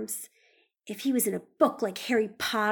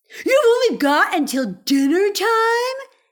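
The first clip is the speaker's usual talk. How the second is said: very loud, high yell, drawn out; 9 semitones higher, 11 dB louder than usual. Reading a story aloud, voicing Ellie as she jumps up: yelled. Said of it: "Yelled Ellie".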